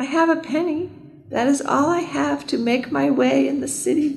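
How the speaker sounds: small, piping, very high tiny voice. Narrator reads Hans answering the growling wolf: very small voice. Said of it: "Hans said in a very small voice".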